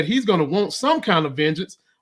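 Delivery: ordinary delivery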